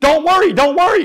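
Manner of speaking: very high, very loud screaming. Pinned under a SWAT cop's boot, screaming back at the cop: retelling a scream. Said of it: "I screamed back at him".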